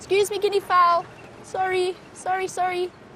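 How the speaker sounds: high-pitched, playful, apologetic tone.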